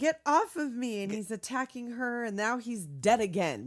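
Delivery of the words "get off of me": put-on, full-on, high, loud struggling scream. Retelling a movie scene where a woman is attacked: imitating a scream. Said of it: "she's screaming".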